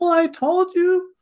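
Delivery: very high, little whiny voice, drawn out. Showing how someone sounds when their wish isn't met, in a little whiny voice. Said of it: "you're going to have this little whiny voice".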